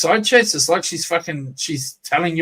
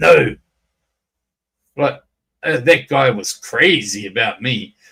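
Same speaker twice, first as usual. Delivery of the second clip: mock low, slow, stern, hard, aggressive, boastful tone; 5 semitones lower than usual. Acting out how people reading her comments think she sounds, mock-stern and aggressive. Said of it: "comes across as like so stern and fucking aggressively".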